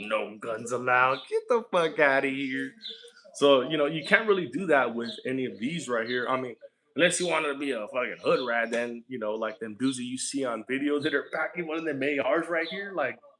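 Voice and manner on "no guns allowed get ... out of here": mock talking through laughter. Acting out a reaction to a no-guns sign: acting out laughing at a sign. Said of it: "you look at and you start laughing like".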